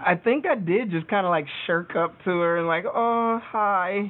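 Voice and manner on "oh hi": play-acted trembling, quavering, high voice. The speaker retells shuffling up to a woman and greeting her: retelling a quivering voice. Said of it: "quivering voice".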